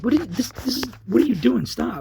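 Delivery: mock, shrill, high, halting, stumbling shout. Retelling being dragged out of his car, re-enacting yelling. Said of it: "I'm yelling".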